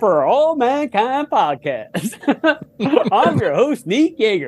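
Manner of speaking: put-on jaunty announcer voice. Retelling a podcast ad to the guests, imitating Neek's jaunty announcer voice. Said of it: "Neek's jaunty announcer voice on that ad".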